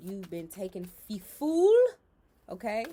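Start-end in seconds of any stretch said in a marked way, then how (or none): 0.0-1.7 very loud, bad, put-on Jamaican accent. Explaining the justice card, slipping into a horrible jamaican accent. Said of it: "That was a horrible Jamaican accent".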